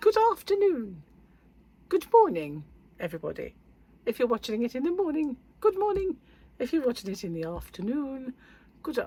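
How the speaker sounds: very high, rising, dog-whistle squeak. Greeting viewers of the video, the speaker uses a very high-pitched voice. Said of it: "be the only ones who can hear me".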